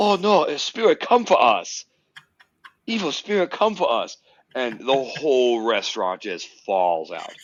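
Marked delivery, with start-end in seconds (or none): 0.0-4.2 terrible put-on Chinese accent, very high-pitched. Retelling being first to talk in a dark restaurant, in a terrible Chinese accent. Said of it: "in this terrible Chinese accent".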